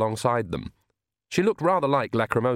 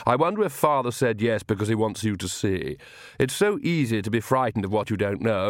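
plain reading voice

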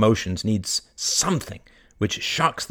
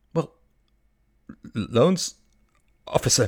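stuttering, stammering, deeply shocked voice; 3 semitones higher than usual. Narrator reads Jonathan's reply to the banker's question: stammering in shock. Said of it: "stammered Jonathan, deeply shocked".

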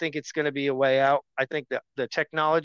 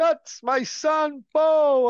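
put-on old man voice, higher, louder, slower; 12 semitones higher, 4 dB louder than usual. Mocking how a man sounds when talking about his son, imitating an old man in a home. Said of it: "He literally sounds like an old man in a home".

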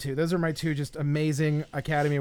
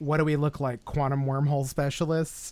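ordinary talk

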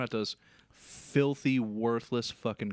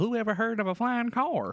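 put-on old grandma voice; 11 semitones higher than usual. Asked to do the meemaw voice for a quote: meemaw voice. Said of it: "You want me to do the meemaw voice for you?".

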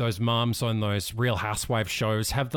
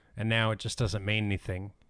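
ordinary talk

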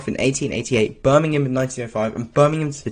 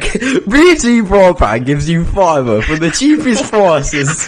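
booming, loud delivery in British English; 4 semitones higher, 7 dB louder than usual. Imagining Jesus coming from the sky, speaking as British Jesus. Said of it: "I can just imagine British Jesus coming".

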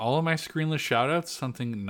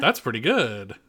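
ordinary talk, nothing marked

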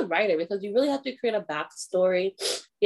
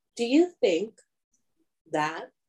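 deliberate, slow, stalling, searching delivery. Starting to ask another speaker a question, then forgetting it: talking slowly. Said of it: "I'm talking slow 'cause I forgot my question".

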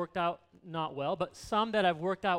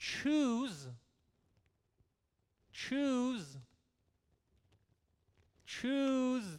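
choose stressed, repeated high and slow. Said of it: "Emphasis on the word choose".

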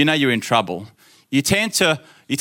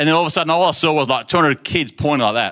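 ordinary talk

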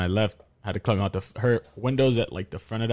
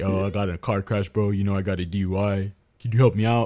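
flat monotone. Retelling what his friend said to him, in a flat monotone. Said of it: "not as monotone as I did right now".

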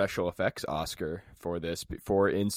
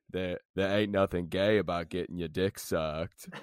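put-on slow southern drawl. Saying a made-up line to sound inspirational: Forrest Gump voice. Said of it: "it's that double up on the sucked".

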